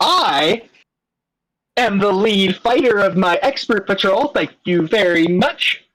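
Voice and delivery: puffed-up, self-important, surprisingly proud tone. Voicing a character answering a sarcastic question about junior patrols; surprisingly proud. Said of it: "he gets surprisingly proud".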